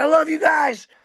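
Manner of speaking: shrill, very high screamed yell. Retelling screaming back to the crew of a towed boat: retelling a scream. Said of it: "I scream back".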